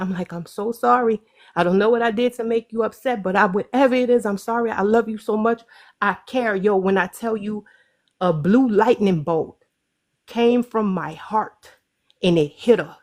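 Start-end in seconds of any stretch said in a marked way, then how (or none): 0.3-6.6 acted, tearful crying voice. Retelling hugging her tight and apologizing: retelling crying while apologizing. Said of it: "I'm crying".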